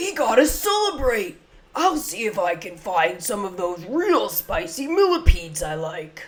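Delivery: pitch swinging all over the place. Voicing a character after leveling him up in a game: Pumbaa voice. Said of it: "after I do his voice expression".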